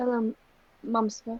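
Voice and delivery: still somewhat dazed. Voicing the father greeting his child after being knocked about: still kind of dazed. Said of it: "he's like still kind of dazed".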